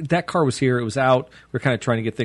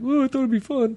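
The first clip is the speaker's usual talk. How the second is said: put-on wheezy old man, very high; 12 semitones higher than usual. Speaker retells a friend showing up unexpectedly, imitating Gabe's wheezy voice. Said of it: "got a wheezy old man voice".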